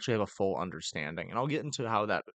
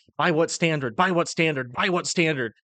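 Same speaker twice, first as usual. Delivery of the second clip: insistent, loud, high-pitched yelling; 8 semitones higher, 7 dB louder than usual. Retelling a pastor yelling when asked the time: imitating Jeff Durbin yelling. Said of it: "he just starts yelling at me".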